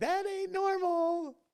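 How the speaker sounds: high, slow, incredulous, stunned drawl. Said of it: "you're like".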